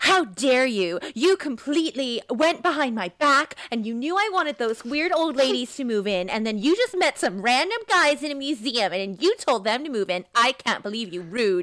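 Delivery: mock angry, mad ranting. Retelling how she got mad at him behind her back: imitating her angry outburst. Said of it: "then she got all mad at Daniel Day-Lewis".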